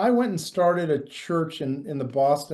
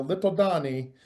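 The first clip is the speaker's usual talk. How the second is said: put-on Yugoslavian accent. Recalling what an old family friend called someone, imitate Mrs. Armstrong's Yugoslavian accent. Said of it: "missus Armstrong's Yugoslavian accent".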